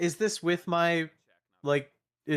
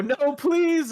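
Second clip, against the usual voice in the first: pleading, pitched way up; 11 semitones higher, 6 dB louder than usual. Voicing a soul being burned up by a spell: Billy's voice pleading. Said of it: "you all hear Billy's voice go".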